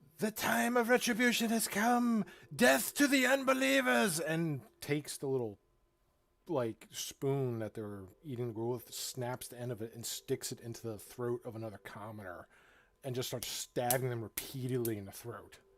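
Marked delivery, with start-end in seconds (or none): 0.2-4.2 fanatical screaming voice. Voicing a commoner who screams out during a commotion: commoner screaming. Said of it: "one of the commoners kinda scream out".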